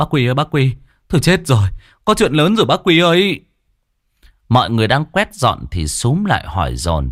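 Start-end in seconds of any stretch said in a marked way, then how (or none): 0.0-3.4 breathless, fast, high, panting between words. A young man runs into a house calling for the owner, out of breath, panting. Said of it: "thở hồng hộc".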